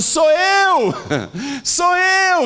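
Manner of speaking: loud, high shout. Retelling a story of a woman running after a man: imitating someone shouting.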